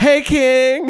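really loud, high-pitched shout.

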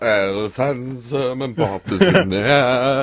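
put-on hungover racing driver voice. Acting out a hungover driver the morning after: Lewis Hamilton impression. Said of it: "I'm fucking mint at this".

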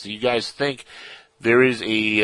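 ordinary delivery

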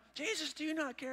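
mock very high, freaked-out, panicked cry. Retelling the frightened followers crying out on the boat: imitating panicked disciples. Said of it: "They're freaking out".

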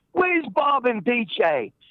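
put-on very slow, stretched-out drawl. Retelling a movie scene where Ozzy comes up: imitating Ozzy yelling. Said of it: "He comes up and he yells at me".

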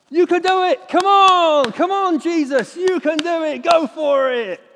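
very loud, slow, drawn-out cheering shout. Describing someone cheering on the sidelines: imitating a sideline shout.

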